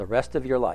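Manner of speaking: flat straight-faced delivery. Telling a story, the speaker quotes a sergeant's reply, retelling a deadpan serious answer. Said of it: "With a perfectly straight face and an utterly serious voice".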